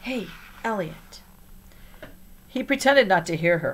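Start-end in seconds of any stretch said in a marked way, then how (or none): 0.0-1.2 hushed, soft whisper. Nori, beside Elliot during headstand practice, calls to him, whispering. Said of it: "she whispered".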